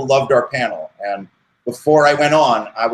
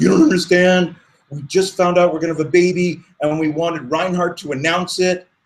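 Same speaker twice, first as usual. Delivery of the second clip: crying, tearful pleading, pitched up; 5 semitones higher than usual. Retelling what a fan said at the end of a signing line: imitating a crying man. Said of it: "He came up crying".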